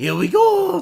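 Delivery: very high, loud, booming belted whoop. Imitating the Mario voice actor's catchphrase: Mario voice. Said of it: "my favorite Mario voice actor, Kevin Afghani. So he can be like".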